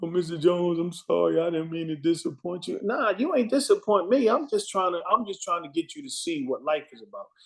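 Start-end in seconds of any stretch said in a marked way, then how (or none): 0.0-2.8 put-on tearful crying voice. Retelling how a student apologized after she started crying: imitating a girl crying. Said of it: "She started crying".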